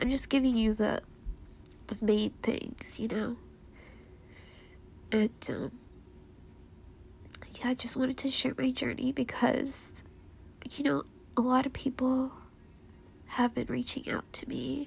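crying while speaking, tearful. Sharing their journey because many people have reached out, crying. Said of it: "I'm already crying up a storm here".

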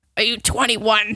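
put-on smoker's voice. Retelling what a woman asked when the speaker got in: a smoker's voice. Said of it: "she has like a smoker's like voice".

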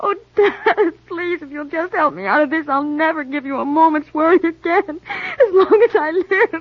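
crying, pleading through tears. A daughter begs her father to help her out of this, crying while pleading. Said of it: "Now don't cry".

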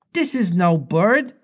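fearful, unnerved and frightened voice. Narrator reads Slightly, first to speak after the silence in the wood, scared voice. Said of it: "he said in a scared voice".

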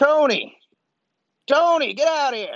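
very high, hollered call. Voicing a shopkeeper calling his partner out of the building: hollering. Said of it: "he hollers into the building".

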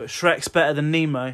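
loud emphatic proclaiming.

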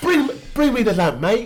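put-on English accent. Friends discussing accents in a movie, one speaks a line in english accent. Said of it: "How many English accents".

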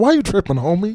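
put-on cheesy, high, old-fashioned late-night infomercial announcer voice. Riffing on a quoted line, imitating an old infomercial. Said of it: "I thought of, like, an old infomercial".

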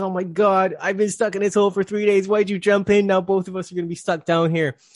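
put-on frantic man, loud, high, panicked. Retelling a story of a man stuck in a hole: imitating a panicked man. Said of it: "the guy starts freaking out".

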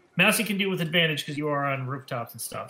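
normal talking voice

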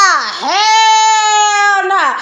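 loud, high-pitched exclamation with "hell" drawn out. Acting out how confused people react after a fight: Martin Lawrence voice. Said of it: "Gotta go to my Martin Lawrence voice".

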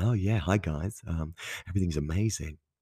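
fake, bright, cheery social-media-style voice. Describing the fake face put on for social media: put-on fake-happy voice. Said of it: "Don't know why I did that voice".

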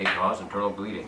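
very quiet, low, hushed commercial announcer voice. Mimicking the closing warnings of medication commercials in a low medication-commercial voice. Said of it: "they end with that low soda voice".

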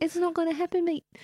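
put-on gentle, quiet Kiwi accent. Describing a softly spoken New Zealander bouncer, voicing him in a soft-spoken New Zealand accent. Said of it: "the softly spoken".

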